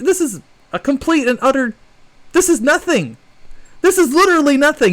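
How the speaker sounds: very upset. Reacting to license changes he distrusts: very upset. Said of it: "You can tell right now I'm very upset".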